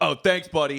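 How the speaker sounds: snide, sarcastic voice. Showing how the driver did not sound: mock sarcastic thanks. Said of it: "it wasn't like".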